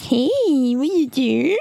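put-on babyish baby-talk voice. Describing how easily it starts, speaker demonstrates: baby voice. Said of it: "det där är ju bebisrösten".

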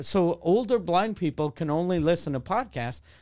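plain

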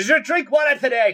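put-on warm Scottish accent. Imitating a TikTok dad who stops to ask about water: put-on Scottish accent. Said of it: "Scottish Daddy on TikTok ... who just stops and goes".

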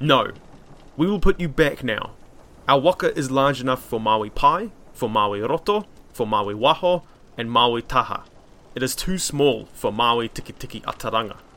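ordinary delivery

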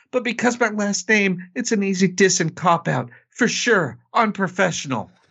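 high-pitched put-on New York mobster voice. Reading Austin Rivers's comments aloud on the podcast in a Fredo Corleone voice. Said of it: "in the voice of another failed son".

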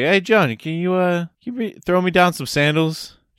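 high-pitched, play-acted calling-out yell. Retelling calling from the basement for sandals: imitating own yell. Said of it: "I was yelling".

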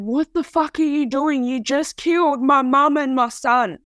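acted, held-in scream at speaking volume. Retelling screaming at the father after the son's death: retelling a scream. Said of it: "I screamed at him".

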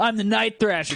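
very high, very loud, burned-out seventies rocker voice. Joking about a character's name, imitating a homeless ex-rocker. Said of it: "sounds like a homeless guy that used to, used to rock out in the seventies, but now just walks around with a guitar and he's like".

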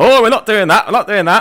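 Yorkshire accent impression. On a podcast, acting out Scotland's reply to England's announcements, put-on Yorkshire accent. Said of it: "In a Yorkshire accent".

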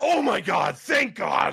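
acted, full-blast, high, drawn-out relieved shout. Retelling what someone in the movie theater blurted out, at full volume. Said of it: "full volume".

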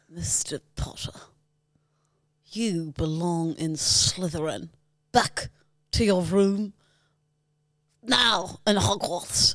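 very slow, deliberate drawl dragging out every word. Doing a Snape impression for a video: Snape voice. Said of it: "Ready for this one?".

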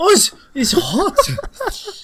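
loud, high, shrill, swooping fake Danish accent. Talking about accents, the speaker tries a fake danish accent. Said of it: "I can do that".

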